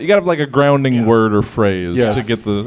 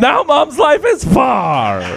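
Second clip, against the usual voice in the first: put-on puppet voice, pitched much higher; 13 semitones higher than usual. Performing a topical haiku for the challenge, Russian-sounding Grover voice. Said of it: "It sounded like a Russian Grover".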